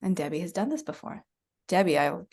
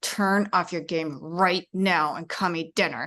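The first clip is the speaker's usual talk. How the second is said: acted, tense, edgy voice through clenched teeth. Retelling how a mother tells her child to come to dinner, acting out an edgy clenched-teeth voice. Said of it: "you feel the edge in the voice".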